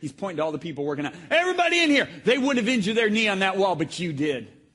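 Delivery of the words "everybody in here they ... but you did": loud, high-pitched, gruff bark. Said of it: "he's so gruff".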